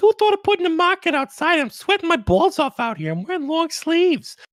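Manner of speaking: put-on New Jersey accent, pitched very high. Imagining what the GE people would say, in a New Jersey accent. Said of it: "New Jersey accent I had".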